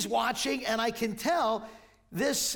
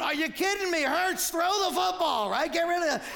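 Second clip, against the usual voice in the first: exasperated, frustrated yell, pitched up; 7 semitones higher than usual. Watching a scene with his grandson, the speaker acts out his own yell: retelling a frustrated yell. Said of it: "if it's me, I'm going".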